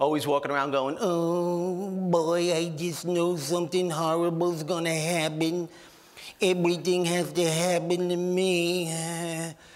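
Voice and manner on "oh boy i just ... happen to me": very slow, mopey lament with me drawn out. Imitating a negative woman as the cartoon Droopy Dog: Droopy Dog voice. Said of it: "Remember that cartoon character, Droopy Dog?".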